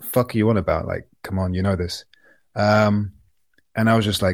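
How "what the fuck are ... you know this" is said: put-on very quiet, exasperated tone. Retelling how someone dismissed a question: imitating a very quiet exasperated retort. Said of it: "in a very quiet".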